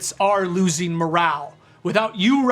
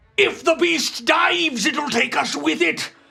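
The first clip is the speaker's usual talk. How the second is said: put-on Cockney pirate accent, higher; 9 semitones higher than usual. Voicing Snake Eye Joe rallying his men: Cockney pirate voice. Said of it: "it's like a Cockney".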